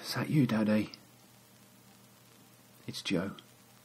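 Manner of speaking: whispering softly. Joe calls out to his father between hammer blows on the brickwork; whispering. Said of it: "It's just a whisper now".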